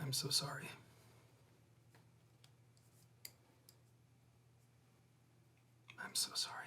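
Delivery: speaking very quietly in a hushed voice. Voicing a character who says, very quietly in her ear: speaking very quietly. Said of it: "I will very quietly in her ear".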